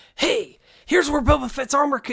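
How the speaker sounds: put-on rapid, hyped-up delivery. Contrasting a chill style with own usual delivery: imitating own loud fast delivery. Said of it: "instead of me coming on like".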